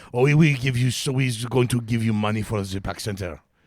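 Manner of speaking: put-on French Canadian accent. Retelling a conversation about his charity; bad french canadian accent. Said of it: "French Canadian accent".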